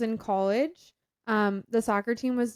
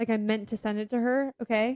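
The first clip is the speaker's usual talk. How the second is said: ordinary delivery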